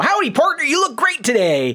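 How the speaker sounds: folksy cowboy voice, pitched way up and swooping. Retelling how store greeters welcome people: imitating cowboy greeters. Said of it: "two guys who are just straight up cowboys".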